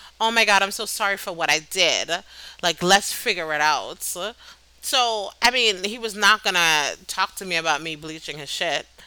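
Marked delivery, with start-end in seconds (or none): none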